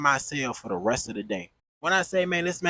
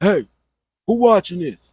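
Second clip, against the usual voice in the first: loud, booming big-man voice; 3 semitones higher, 7 dB louder than usual. Retelling what a big man in the pod said: imitating a big man's deep voice. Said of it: "That man voice sound just like how he look".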